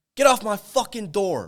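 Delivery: crazed, very high, very loud, drawn-out yell. Role-playing a homeowner with a job candidate: yelling as the craziest homeowner. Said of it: "And I'll yell at 'em".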